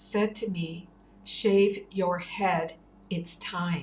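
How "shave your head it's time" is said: put-on, booming voice. Speaker recounts a voice speaking to them in their room, retelling Baba's booming voice. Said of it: "like a booming voice".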